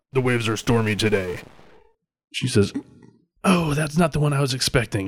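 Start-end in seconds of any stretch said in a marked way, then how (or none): 0.1-1.4 synthetic, machine-like robotic voice. Narrating a voice heard as a hailing channel connects, in a robotic voice. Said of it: "you hear a robotic voice say".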